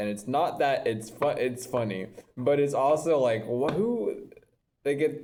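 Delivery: trying not to laugh, stifled laughter, words breaking off. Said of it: "I'm trying not to laugh".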